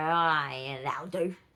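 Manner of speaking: put-on loud, slow, odd Australian accent, drawn-out yeah. Quoting own past thoughts about making thumbnails: sort of weird Aussie accent. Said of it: "Sorry about the Aussie sort of weird accent".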